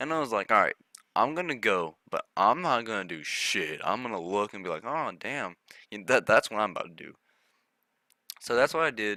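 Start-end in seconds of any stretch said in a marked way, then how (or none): none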